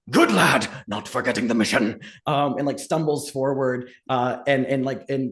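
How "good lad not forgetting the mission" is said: grunted out. A narrator voices a half-crushed man pushing a companion through a door, grunting. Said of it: "as he grunts out like".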